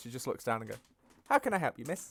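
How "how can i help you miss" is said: cheerful, bright, chipper customer-service voice. A character greets someone she calls miss, chipper voice. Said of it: "back to the chipper voice".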